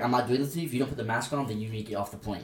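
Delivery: ordinary talk, nothing marked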